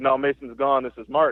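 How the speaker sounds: ordinary talk, nothing marked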